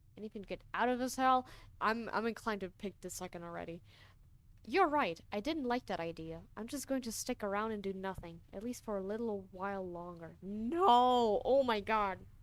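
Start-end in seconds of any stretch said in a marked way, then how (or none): 10.4-11.4 very slow, loud, drawn-out "no" with voice breaking. Rejecting the option of doing nothing, voice cracking. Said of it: "Voice crack".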